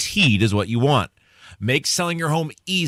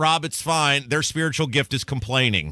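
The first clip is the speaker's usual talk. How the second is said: normal talking voice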